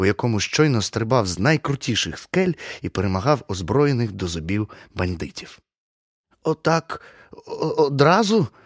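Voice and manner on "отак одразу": husky, hoarse, pitched-up voice. The narrator asks the woman, stalling for a few minutes, hoarse question. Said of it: "хрипко запитав я".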